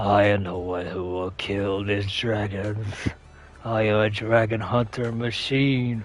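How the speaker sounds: evil growling voice. Describing the voice expected from an animated dragon hunter, evil growling voice. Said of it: "like an evil growling voice".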